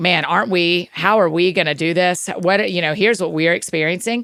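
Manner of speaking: ordinary talk, nothing marked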